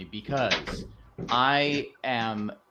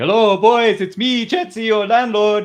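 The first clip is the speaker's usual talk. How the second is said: very high, loud voice, belted out; 10 semitones higher, 13 dB louder than usual. Retelling walking into work quoting Chetzi the landlord: Chetzi the landlord voice. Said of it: "walking into work one day, just going".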